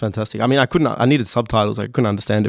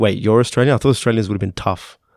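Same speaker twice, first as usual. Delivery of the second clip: ordinary talk, nothing marked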